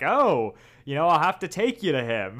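put-on coy wise-master voice. Retelling a scene where Yoda plays coy with Luke: coy Yoda impression. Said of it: "Yoda's being all coy and being like".

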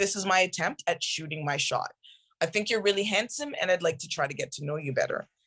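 plain

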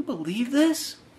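very quiet, high, hushed half-whispered aside. Retelling how Sisko half-whispered over to Kyle, retelling a half-whisper. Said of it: "he's just whispering over at Kyle's like".

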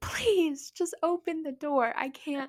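desperate, high, sobbing, crying scream. Retelling an hour spent trying to open a door, retelling a scream. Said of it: "I'm screaming the entire time".

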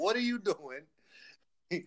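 slow, confronting, challenging tone. Retelling a wrestler yelling at another in the ring: imitating Tamina yelling. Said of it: "Tamina's yelling back at her like".

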